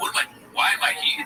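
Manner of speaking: mock bewildered, baffled and amazed, shocked tone. Mocking a comedian who acts shocked on stage: imitating Adam Ray acting shocked. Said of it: "he acts like everything is shocking to him".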